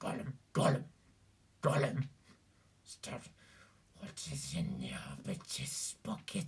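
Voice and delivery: low, guttural, breathy whisper. Demonstrating how Gollum differs from Stitch: low guttural Gollum voice. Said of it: "Gollum is a little lower and a little more guttural".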